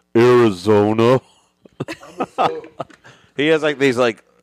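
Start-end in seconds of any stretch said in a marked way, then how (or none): 0.2-1.2 put-on uneven loudness, louder, lower pitch. Defending the impression of Tim to doubters, imitating Tim's volume shifts. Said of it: "Slight audible shifts in volume".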